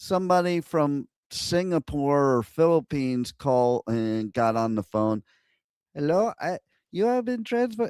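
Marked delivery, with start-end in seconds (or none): 5.9-7.9 rushed, very high, put-on Indian accent. Speaker acts out an agent from Singapore or the Philippines taking the transferred call, put-on Indian accent. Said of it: "I can only do Indian".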